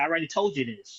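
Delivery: mock irritated, annoyed tone. Retelling someone's answer to a question asked again, retelling an irritated reply. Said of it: "Coleman got real irritated".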